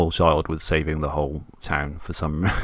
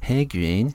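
put-on voice with attitude, higher and quieter; 5 semitones higher, 4 dB quieter than usual. Quoting a talking point from the game that sounds like Cartman: Eric Cartman voice. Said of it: "sounds exactly like Eric Cartman from South Park".

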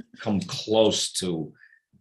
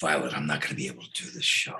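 deep, hoarse, strained, worn-out rasp pushed out low; 7 semitones lower, 7 dB quieter than usual. Retelling calling his wife after he couldn't talk: Alec Baldwin voice. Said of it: "I sounded like Alec Baldwin".

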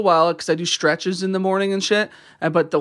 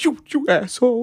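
mock sad, emotional, higher; 6 semitones higher than usual. Retelling a friend's reply after being teased about his hat: imitating someone sad and emotional. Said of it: "he got all sad and emotional".

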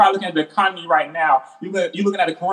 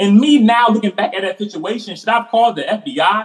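ordinary talk

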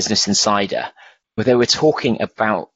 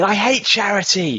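put-on very high, shrill children's screaming shriek; 11 semitones higher than usual. Imitating the kids watching the London Marathon: imitating kids screaming. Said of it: "They were screaming".

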